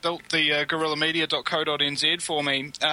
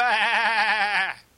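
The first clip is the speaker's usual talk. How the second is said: high, mock-shouted "bah" like a sheep. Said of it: "they're shouting".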